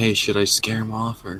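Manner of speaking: hushed, half-whispered stage whisper. Playing a character, half-whispering a question to another party member: half-whispering in character. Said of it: "I'm gonna whisper to Victor".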